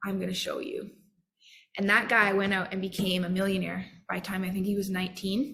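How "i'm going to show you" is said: mock mutter through gritted teeth, quieter. Retelling a humiliated teenager's vow: imitating muttering through gritted teeth. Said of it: "under his breath and gritting his teeth".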